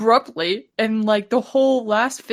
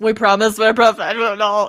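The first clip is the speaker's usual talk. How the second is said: ordinary delivery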